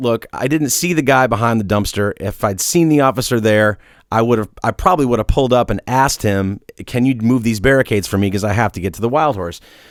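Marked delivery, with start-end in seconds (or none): none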